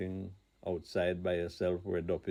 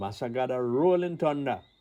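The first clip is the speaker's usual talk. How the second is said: loud, high shout; 5 semitones higher, 6 dB louder than usual. Telling a family story, the speaker imitates grandmother shouting. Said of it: "my grandmother would shout".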